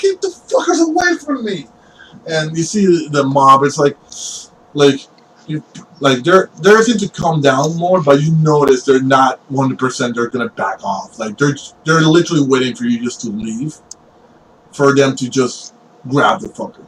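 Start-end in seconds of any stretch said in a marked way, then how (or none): 0.0-1.7 high-pitched, frantic, pleading voice. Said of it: "you heard him just go like".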